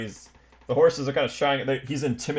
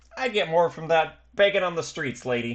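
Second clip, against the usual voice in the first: put-on just a touch of Boston accent; 4 semitones higher than usual. Voicing a scrappy street kid haggling over pay: little Boston accent. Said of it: "a little Boston accent".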